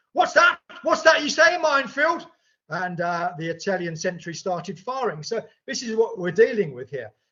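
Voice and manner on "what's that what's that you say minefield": mock very high, loud, booming outburst. Recounting a man who stood up on hearing of a minefield, retelling a loud outburst. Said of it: "in a loud voice saying".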